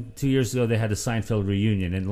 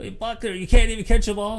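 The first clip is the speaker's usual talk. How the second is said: high, loud yell. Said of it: "Jeff starts yelling at him".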